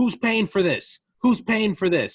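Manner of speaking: loud yell. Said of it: "he's yelling at the protesters".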